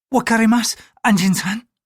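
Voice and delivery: nervous, thin-voiced. Narrator voicing a woman answering a man's question, thin, nervous voice. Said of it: "she replied in a thin, nervous voice".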